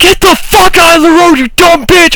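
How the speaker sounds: put-on, shrill, very high-pitched scream. Retelling braking for a woman in the road, retelling a scream. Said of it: "I screamed out my window".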